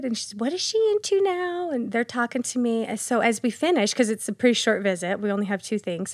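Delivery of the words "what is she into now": put-on very high, thick Southern accent with drawn-out vowels. Retelling a short visit where a lady asks about Sadie, in a put-on Southern accent. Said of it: "they've got their real deep Southern accent".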